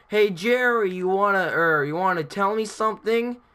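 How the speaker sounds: grown man's high, angry yelling scream. Retelling a grown man screaming at jerry under the bleachers, imitating his angry scream. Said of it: "grown man's voice screaming".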